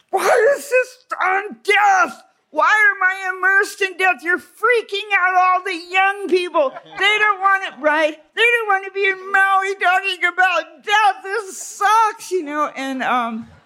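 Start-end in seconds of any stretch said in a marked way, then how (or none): 0.1-12.3 very high, shrill, shouting rant. Retelling a man shouting at Raghu, doing a Bobcat Goldthwait impression, shouting. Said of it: "And he was shouting".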